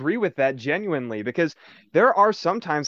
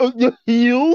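taunting, mocking echo in a raised, high voice; 7 semitones higher, 7 dB louder than usual. Player retells the reply they typed to another player asking for heals, mockingly. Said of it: "I typed back mockingly".

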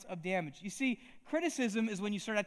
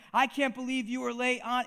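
imitated yell, higher and louder; 4 semitones higher, 5 dB louder than usual. Retelling a boss reaming the speaker out for lateness: imitating a boss yelling. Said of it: "He is yelling at me and saying".

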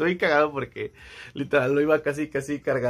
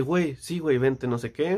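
ordinary talk

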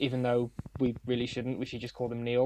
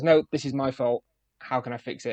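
normal talking voice

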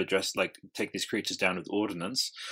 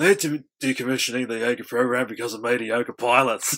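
exaggerated put-on Australian accent, higher and louder; 3 semitones higher, 8 dB louder than usual. Having a crack at a film character's line: imitating an exaggerated Australian accent. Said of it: "have a crack at the line".

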